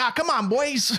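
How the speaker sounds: put-on very high, crazy New York accent. Describing a kid character in a movie, crazy new york accent. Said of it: "He has a crazy New York accent".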